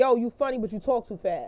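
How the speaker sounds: ordinary delivery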